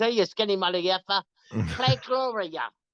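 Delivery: put-on thick, heavy New Jersey accent, high-pitched. Speaker quotes a dancing girl calling out to him, in a heavy New Jersey accent. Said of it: "she had really heavy New York, I mean New Jersey accent".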